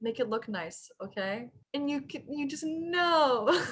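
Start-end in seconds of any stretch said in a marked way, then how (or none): 0.0-1.5 very quiet, soft, hushed, low-key voice. Retelling what a character in a scene says: imitating a quiet line. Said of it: "very quietly says".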